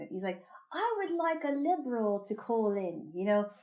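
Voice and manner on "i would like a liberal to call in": put-on British accent, high-pitched and slow. Quoting a favorite guest host on a call-in show: imitating a british accent. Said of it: "and he had a British accent".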